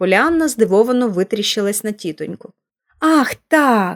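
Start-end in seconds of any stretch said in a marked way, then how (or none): 3.0-4.0 glad, relieved exclamation. Narrator reads the girl finally answering her aunt's questions, exclaiming with relief. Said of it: "нарешті з полегшенням вигукнула вона".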